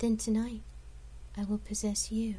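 alluring, seductive tone. A narrator reads a woman's reply to him, in a seductive tone. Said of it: "she replied in a seductive tone".

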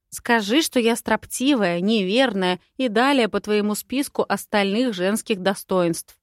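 ordinary delivery

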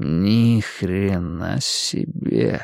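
slow, low, stretched-out drawl. A character reacts to a dent punched into the wall, drawled. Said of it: "в растяжку произнес [name]".

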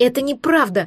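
outraged, indignant outburst. The narrator retorts to the red-haired man: indignant. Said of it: "возмутилась я".

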